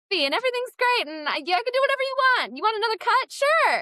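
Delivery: very high-pitched voice, rattled off fast. Speaker acts out the persona she puts on at auditions, voice shooting way up. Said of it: "my voice shoots up like 3 octaves".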